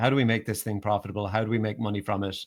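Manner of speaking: ordinary talk, nothing marked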